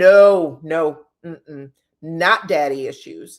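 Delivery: mock loud, very slow, firm, drawn-out "no". Retelling how Fumi said something to drive it home, imitating Fumi's firm insistence. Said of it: "she said it like this: ... Like she really wanted to drive it home".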